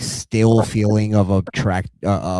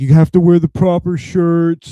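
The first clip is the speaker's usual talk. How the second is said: pitched-up, nagging, griping complaint; 8 semitones higher, 4 dB louder than usual. Retelling how the bosses complained about work shirts, imitating bosses complaining. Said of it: "they start bitching at us".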